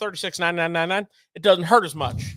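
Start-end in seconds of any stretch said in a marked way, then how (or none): 0.0-1.1 very fast, rattled-off delivery. Quoting the price of a motor, the speaker says it really fast. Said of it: "If you say it real fast".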